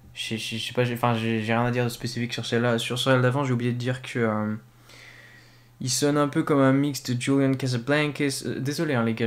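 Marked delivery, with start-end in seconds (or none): 7.2-8.5 word said in an English accent. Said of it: "je prends l'accent anglais".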